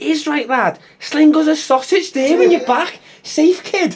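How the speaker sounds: put-on thick Liverpool accent. Reading a funny story aloud, a pet pufferfish answering: thick scouse accent. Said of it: "Zerg replies with a thick Scouse accent".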